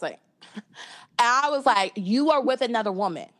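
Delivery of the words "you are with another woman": put-on heated outburst, much faster. Retelling confronting a partner seen with another woman; retelling a heated accusation. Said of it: "I was heated".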